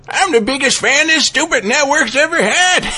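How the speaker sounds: acted elderly man voice. Speaking up as a fan of the network, in the Dungeon Quest old man voice. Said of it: "use the Dungeon Quest voice".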